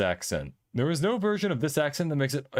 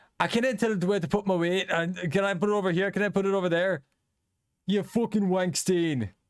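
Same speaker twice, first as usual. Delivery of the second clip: full put-on Scottish accent, pitched up; 6 semitones higher than usual. Showing how a Scottish accent sounds: imitating a Scottish accent. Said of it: "Scottish, it's like".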